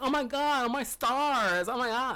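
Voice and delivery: put-on high, exaggerated, flamboyant caricature voice. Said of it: "they don't talk like".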